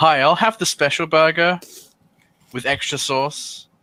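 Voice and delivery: very loud, very high, carrying call-out. A player's character orders food hoping to attract anyone who knows what's happening, very loud. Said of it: "very loudly so most people can hear".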